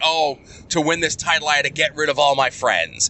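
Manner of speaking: normal talking voice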